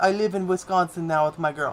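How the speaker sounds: horrible put-on Russian accent. Relaying what another person told them, in a horrible Russian accent. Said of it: "In horrible Russian accent".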